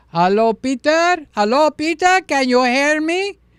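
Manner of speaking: put-on thick, heavy Greek accent, loud and high. Imitating a retired Greek priest calling him on the phone, in a full Greek accent. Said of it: "So we got the full Greek accent".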